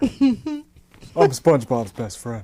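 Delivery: low, slow, swooping, dragged-out cartoon voice. Asked to do the voice, joking as the cartoon starfish: Patrick Star voice. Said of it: "Patrick Star".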